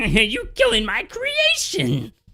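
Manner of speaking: very high, shrill, loud cackling witch voice. Narrating a tabletop game as players attack, voicing the witch: cackling witch voice. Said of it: "The witch cackles".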